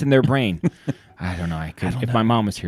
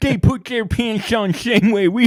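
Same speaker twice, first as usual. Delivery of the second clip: put-on mouthy slobbering voice, higher; 12 semitones higher, 4 dB louder than usual. Repeating the quote after explaining the impression: Lou Holtz impression. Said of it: "my impression of Dan Patrick doing a Lou Holtz impression".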